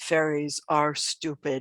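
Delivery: deep, low creature voice, as if from below. Narrating a scene, a voice way down by the listener's feet speaks, deeper voice. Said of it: "deeper voice way down by your feet say".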